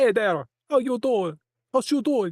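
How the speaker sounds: high Jamaican accent. Showing the accent they'd use pretending to be from out of town: attempted Jamaican accent. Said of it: "a Jamaican or something".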